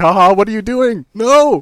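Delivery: very high, frantic, desperate shout. Retelling how someone shouted from his room, retelling a desperate shout. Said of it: "desperately shouting from his room".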